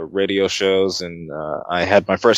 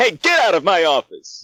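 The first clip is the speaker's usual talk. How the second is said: very high, swooping voice from a raised throat; 11 semitones higher than usual. Showing how the throat rises for a character: raised-throat Lionel Hutz voice. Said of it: "your throat goes up like that".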